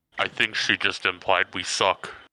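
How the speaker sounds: hushed, whispered side comment. Whispering to a party member during a game: whispering in character. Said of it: "whisper to Adam".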